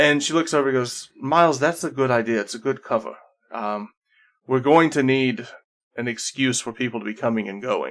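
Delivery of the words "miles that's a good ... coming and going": put-on character voice, sighing. Voicing Sarah replying to Miles: exasperated sighing tone as Sarah. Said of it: "very close to just this sigh of".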